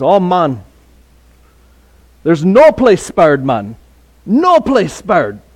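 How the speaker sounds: put-on lilting, sing-song Jamaican accent. Retelling what a Jamaican man told the speaker, in a Jamaican accent. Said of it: "he tells me in his Jamaican accent".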